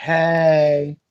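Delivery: put-on valley girl voice. Showing how a Valley girl would say hello: Valley girl voice. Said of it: "If I was a Valley girl".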